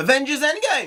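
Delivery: loud voice crack breaking very high. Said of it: "my voice cracked".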